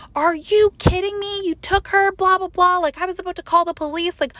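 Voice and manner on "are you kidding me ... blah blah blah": mock furious screaming, completely coming apart. Speaker recalls finally reaching her mom, retelling her scream. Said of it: "I screamed at her".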